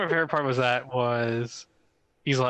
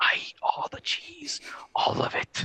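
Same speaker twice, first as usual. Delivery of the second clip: secretive, sneaky, hushed whisper under the breath; 3 dB quieter than usual. Retelling a trailer scene where a player whispers to a voice assistant: imitating someone whispering. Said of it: "whispering to Alexa".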